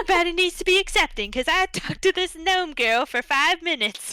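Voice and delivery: thick put-on Southern accent. Retelling what a townsperson in an audiobook said: thick southern accent. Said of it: "she had a very thick southern accent".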